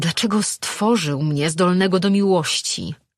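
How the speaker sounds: angry, heated delivery. Lejard, having pushed a woman away, speaks to her angrily. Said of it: "Złościł się".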